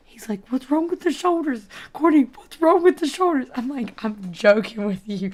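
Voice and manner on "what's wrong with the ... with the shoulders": acted frantic freak-out, very high, fast, panicked. Courtney retells a man repeating his question to her, imitating him freaking out. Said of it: "he's freaking out now".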